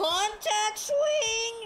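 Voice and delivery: squeaky, breaking, cracking, very high voice. Speaker calls out mid-game, voice cracking. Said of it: "voice cracked, sorry".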